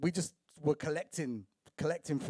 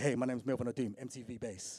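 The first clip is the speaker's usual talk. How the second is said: confident, self-assured voice; 3 semitones lower, 5 dB quieter than usual. Retelling how a friend introduced himself to people: imitating Melvin's confident introduction. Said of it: "he'd walk up to you and be like".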